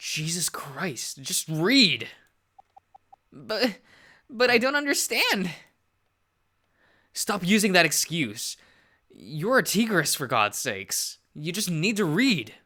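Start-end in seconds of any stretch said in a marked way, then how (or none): 3.3-5.5 put-on tearful speech, higher and louder. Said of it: "Stop fucking crying".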